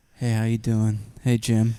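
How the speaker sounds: low, slow, put-on sexy voice. Trying a voice after being asked about a hot voice: put-on hot voice. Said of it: "is that your hot?".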